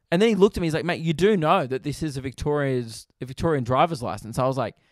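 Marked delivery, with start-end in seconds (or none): none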